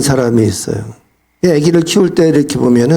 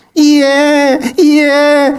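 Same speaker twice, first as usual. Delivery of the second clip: put-on very high, intense, sharp 'ie ie' baby-like wail; 12 semitones higher than usual. Showing how a baby fusses over an uncomfortable diaper: high, sharp baby cry 'ie ie'. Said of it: "고음으로 이에 이에 이렇게 날카롭게 강렬하게 울어요".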